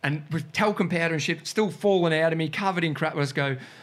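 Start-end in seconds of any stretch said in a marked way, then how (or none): none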